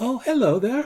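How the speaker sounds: high-pitched gnomish voice. Game master voicing a gnome behind the player in the ethereal realm, gnomish voice. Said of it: "a gnomish voice saying".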